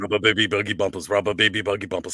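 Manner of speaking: rapid, rattled-off tongue twister delivery.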